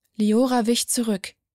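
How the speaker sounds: usual speaking voice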